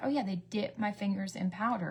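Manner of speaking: plain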